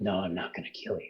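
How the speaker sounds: damaged-sounding, rough voice. Imitating what a man says in his voice, gravelly damaged voice. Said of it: "really gravelly voice".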